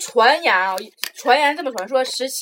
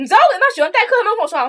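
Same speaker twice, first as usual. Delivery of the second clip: put-on furious, pitched-up, angry complaining voice; 8 semitones higher, 4 dB louder than usual. Speaker retelling how the teacher came back and complained to the class, imitating the very angry teacher. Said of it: "我们老师特别生气".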